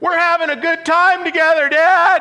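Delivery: very high, loud yell, "Dad" drawn out. Retelling a son calling from rows away on a flight: imitating a son yelling. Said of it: "yelling across the thing".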